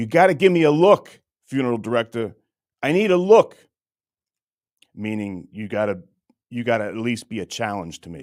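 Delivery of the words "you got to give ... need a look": shrill, loud, high-pitched screaming. Acting out annoying a chess opponent, mock screaming. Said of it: "And then I'll start screaming".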